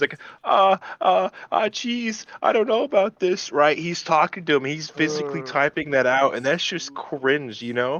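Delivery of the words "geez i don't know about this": very high-pitched, nervous stammer. Retelling how a man talked while typing, in the Morty voice. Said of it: "he was talking in the Morty voice".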